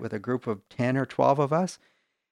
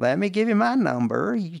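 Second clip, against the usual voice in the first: high-pitched, bad, put-on Tennessee accent. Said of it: "forgive me for butchering your accent".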